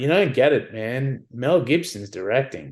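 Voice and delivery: ordinary talk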